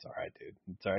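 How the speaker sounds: quiet, soft, reassuring tone.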